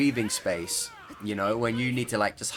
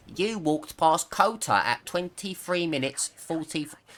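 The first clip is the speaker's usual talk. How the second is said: high, slow mocking voice. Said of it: "I still know someone in the comments".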